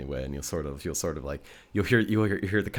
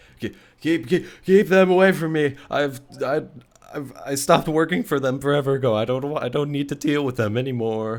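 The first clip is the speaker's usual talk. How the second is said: put-on frightened, word-tripping drunk stumble, very high and loud; 9 semitones higher, 8 dB louder than usual. A game master voices a character during the scene, in a scared, stumbly drunk voice. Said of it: "a very kind of like scared and pretty pretty stumbly, definitely drunk voice".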